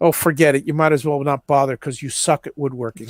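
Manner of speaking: flat, mock deadpan delivery. Retelling a woodworking comedy skit, imitating its deadpan delivery. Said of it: "it's his deadpan".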